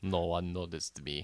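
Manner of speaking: put-on Russian accent. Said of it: "we're doing better Russian accents than Mickey Rourke did".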